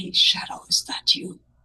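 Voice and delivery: soft, quiet whisper. Whispering in character so the librarian won't hear: whispering in character. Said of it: "I will whisper".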